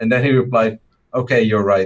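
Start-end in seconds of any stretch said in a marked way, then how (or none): 1.1-1.9 put-on sarcastic, mocking tone. Quoting another person's reply after a disagreement: retelling sarcastic agreement. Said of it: "like sarcastically saying that I'm right".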